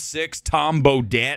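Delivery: ordinary talk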